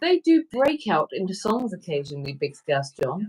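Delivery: ordinary talk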